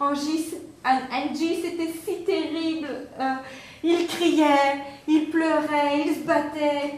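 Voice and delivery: tearful speech through crying. Acting out one mom talking to another mom, imitating a mother crying. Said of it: "Alors elle pleure".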